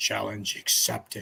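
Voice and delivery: put-on fighting-game announcer voice. Accepting a challenge to go find pictures, use a Mortal Kombat announcer voice. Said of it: "your most Mortal Kombat voice ever".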